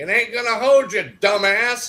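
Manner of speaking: put-on loud old man voice. Retelling a ghost recording heard while sitting on wood: imitating an old man. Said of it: "you hear this old man goes".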